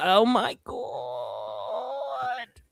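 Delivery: strained, high, swooping squawk like a straining bird. Told to sound like a constipated bird, saying the phrase as a Chuck Schumer impression. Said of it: "sound like a constipated Willow Ptarmigan".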